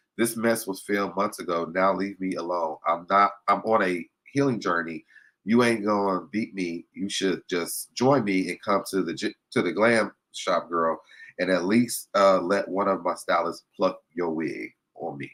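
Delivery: ordinary delivery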